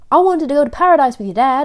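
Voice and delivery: put-on loud exclamation in an American accent. Retelling a handmaiden's line from a story: American accent. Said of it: "I went American there".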